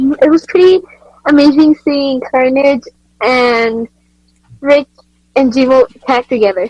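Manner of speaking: helium-sounding voice. Commentator asked his thoughts on a tag-team match, answering in a helium-sounding voice. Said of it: "you sound like you've been inhaling helium".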